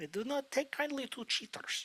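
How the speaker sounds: very quiet put-on Russian accent. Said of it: "a Russian accent like he is".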